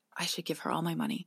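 quick whispered words.

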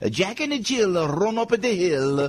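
read in a put-on Italian accent. Acting out his father reading children's books in class, imitated Italian accent. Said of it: "with the Italian accent".

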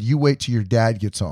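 ordinary talk

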